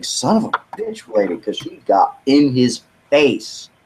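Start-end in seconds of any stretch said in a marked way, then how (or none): 0.0-1.3 hushed, grumbled, muttered under the breath. Retelling what a young man said under his breath to a lady, imitating muttering under breath. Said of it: "I could see him under his breath saying".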